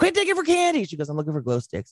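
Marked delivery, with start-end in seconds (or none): 0.0-0.8 very high-pitched scolding yell. Retelling yelling at a little girl digging through the glow box: retelling a yell. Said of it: "I yelled at her and said something like".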